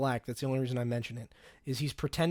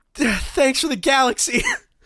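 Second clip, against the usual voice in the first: panting, winded, very high and very loud; 11 semitones higher, 12 dB louder than usual. Retelling how a tired streamer thanks viewers: imitating someone out of breath. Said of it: "sweating and out of breath".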